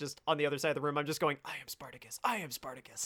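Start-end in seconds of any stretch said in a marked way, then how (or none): 1.4-3.1 very quiet whisper under the breath. Retelling whispering a line to oneself while watching: imitating own whisper. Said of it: "I'm just whispering to myself".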